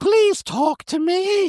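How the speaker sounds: put-on very high, slow, pleading little-kid voice. Acting a child begging a parent to watch sports: playing a pleading child. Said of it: "Daddy, watch sports with me".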